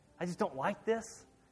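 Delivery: ordinary delivery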